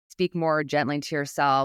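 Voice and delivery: ordinary talk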